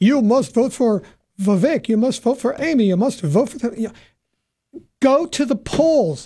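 put-on slipping into a half Russian accent. Acting out what voters are being told, to a co-host: half Russian accent. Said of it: "almost like a half Russian accent there".

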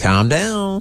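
patronising, condescending talking-down tone. Speaker suggests an alternative to yelling, saying it in a patronising tone. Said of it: "What about say in a patronising tone?".

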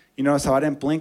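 plain

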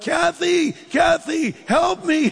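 yelling out, pitched high.

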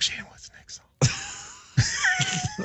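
soft, hushed whisper. Retelling how a man would say everything, then whisper it: imitating a whisper. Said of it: "you would say it and then whisper it".

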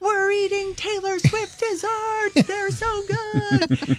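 very high, thrilled, excited shrieking scream. Retelling how the fans reacted to the desserts: imitating fans screaming. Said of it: "literally screaming".

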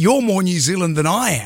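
normal talking voice

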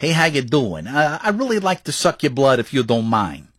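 Northeast American accent. Showing the other speaker the kind of Dracula we need, Dracula with a Northeast American accent. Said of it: "a Dracula that's like from the northeast part of America".

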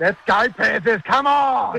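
high-energy yell. Showing a co-host how to cheer the panthers at the final siren, energetic shout. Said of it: "Give it more energy, bro".

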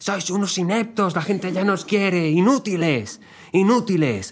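high-pitched, furious shouting. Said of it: "mandó una nota de audio gritando".

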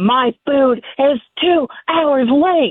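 mock screaming. Retelling a late-delivery customer screaming at the driver: imitating a customer screaming. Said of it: "just starts screaming at me".

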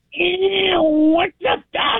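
put-on very high-pitched cartoonish voice. Answering a request from the other speakers with a Bugs Bunny imitation. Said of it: "Can you do a Bugs Bunny imitation for us?".

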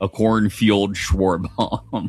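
very serious tone, low-pitched, slow and dead serious. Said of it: "in a very serious tone".

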